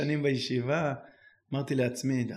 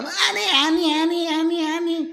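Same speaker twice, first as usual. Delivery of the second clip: put-on very high, rapid, excited, eager kids voices; 4 dB louder than usual. Telling a story about a classroom, the speaker acts out the children all eagerly calling out at once, imitating eager kids. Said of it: "כולם מצביעים בהתלהבות".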